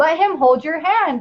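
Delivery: acted, angry, mild, half-shouted yelling. Retelling what the person in charge yelled at the speaker: imitating someone yelling. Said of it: "was yelling at me".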